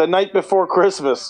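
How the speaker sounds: ordinary talk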